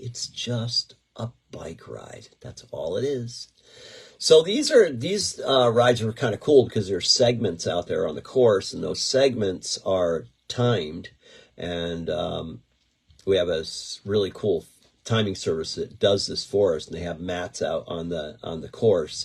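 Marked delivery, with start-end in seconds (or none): 0.0-2.3 slow, soft, calm, soothing voice. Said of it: "Don't get all bent out of shape".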